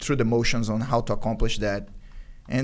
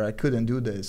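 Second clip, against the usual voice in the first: usual speaking voice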